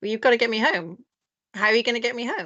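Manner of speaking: entitled, insistent, demanding voice. Retelling demanding help after a canceled flight, in a Karen voice. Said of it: "It might just be my Karen voice".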